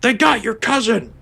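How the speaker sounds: squeaky, very high, alarmed yell. Retelling what an enemy in the game yells, imitating an enemy yelling. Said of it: "another guy yells again".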